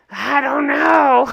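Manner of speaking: voice with a rough edge. Recapping a lunch, quoting Mom speaking to Cameron: impression of Mom. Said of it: "That's my impression of Mom".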